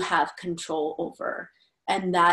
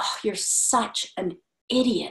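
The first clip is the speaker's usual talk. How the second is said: put-on scornful, contemptuous tone, slow and disdainful; 3 semitones higher than usual. Retelling a harsh thought once said to oneself: imitating disdain. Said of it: "with such disdain".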